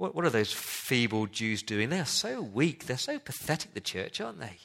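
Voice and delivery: scornful, taunting sarcasm with mocking, swooping pitch. Reading the verse aloud as it is meant, in a sarcastic mocking tone. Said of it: "We're supposed to read verses 2 and 3 with this kind of sarcastic tone".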